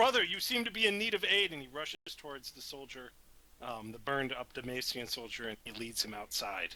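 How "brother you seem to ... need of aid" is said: very high-pitched, loud shouted yell. Playing a character who rushes to help a burned soldier: yelling out. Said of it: "Bao Sheng yells out".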